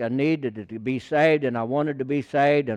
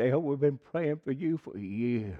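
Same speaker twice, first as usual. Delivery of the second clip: put-on quivering, quavering voice; 6 dB quieter than usual. Speaker retells what the old deacon said when greeting him: imitating a quivery voice. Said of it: "with a quivery voice and said".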